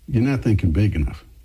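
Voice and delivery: ordinary talk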